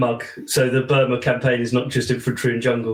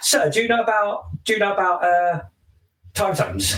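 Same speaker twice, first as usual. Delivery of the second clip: put-on high, classic British schoolkid accent; 8 semitones higher than usual. Retelling a school kid's question about time zones, in a british school kid accent. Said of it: "British school kid from where I'm from accent".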